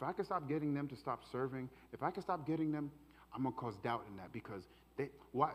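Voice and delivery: half-whispered, hushed, needling, doubtful tone. Acting out how the enemy sounds when casting doubt: voicing the enemy's doubting half-whisper. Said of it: "and this is how it sounds".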